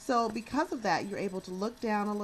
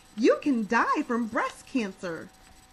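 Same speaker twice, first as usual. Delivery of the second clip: loud, swooping, overly jolly sing-song delivery; 3 semitones higher, 8 dB louder than usual. Showing what not to do on a serious subject: overly jolly tone. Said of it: "being overly jolly on serious subjects".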